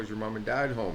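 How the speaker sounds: plain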